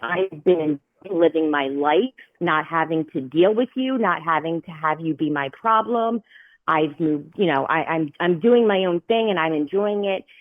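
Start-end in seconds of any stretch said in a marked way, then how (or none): none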